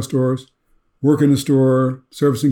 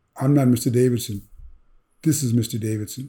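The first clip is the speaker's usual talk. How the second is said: mock-sheepish, quieter; 5 dB quieter than usual. A young man who works for the speaker corrects a mistaken greeting: retelling a sheepish reply.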